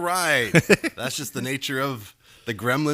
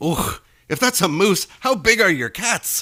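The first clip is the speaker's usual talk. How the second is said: put-on loud, high Scottish accent; 6 semitones higher, 5 dB louder than usual. Telling a joke, voicing the Scotsman's punchline: Scottish accent. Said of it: "The Scotsman".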